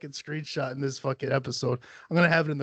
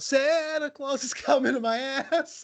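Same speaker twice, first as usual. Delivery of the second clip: mock very high, shrill little-kid hollering; 10 semitones higher than usual. Retelling what a friend's daughter yelled from the back seat: imitating a child yelling. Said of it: "she just yells out".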